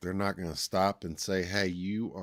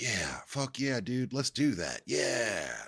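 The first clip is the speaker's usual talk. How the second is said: eager-to-please chatbot voice, pitched up; 5 semitones higher than usual. Acting out an AI agreeing to anything: imitating an agreeable AI chatbot. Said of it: "just to, like".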